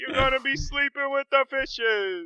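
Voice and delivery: put-on Italian mobster accent, very high-pitched. Joining in on impersonating an Italian mobster; Italian mobster impression. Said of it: "impersonate an Italian mobster".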